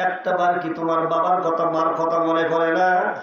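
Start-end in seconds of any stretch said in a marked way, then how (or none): none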